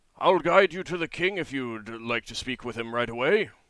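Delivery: big booming giant voice from above. Narrating a game, voicing a man offering to guide the players to the king, booming voice. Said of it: "his voice booms down to you again".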